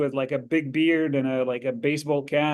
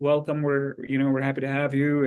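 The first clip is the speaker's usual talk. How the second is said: mock-calm, welcoming tone, faster. Recalling a man who shook his hand when he arrived, retelling a calm welcome. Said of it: "he was very calm".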